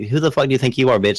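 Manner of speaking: furious, angry outburst, going off. Retelling how the wife went off on a man in a parking lot: imitating someone going off angrily. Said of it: "went off on him".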